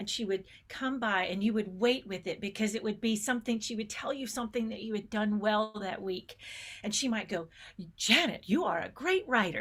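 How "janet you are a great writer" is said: beautiful, sing-song, put-on Southern accent. Recalling praise she gave Janet that week; imitating her Southern accent. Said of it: "using her kind of beautiful Southern accent".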